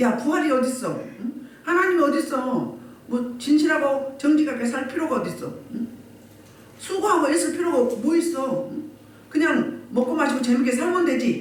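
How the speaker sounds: high scoffing jeer. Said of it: "부활을 조롱하고 비웃는 사람".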